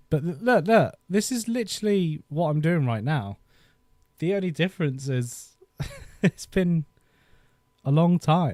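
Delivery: moved, emotion welling up. Looking back at old footage of how they used their computer: getting emotional. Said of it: "I'm getting quite emotional now".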